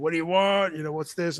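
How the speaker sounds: mock curt, pushy, abrupt, brash New York attitude. Retelling an airline desk agent's greeting: imitating abrupt brash new york attitude. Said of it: "a whole wave of New York attitude".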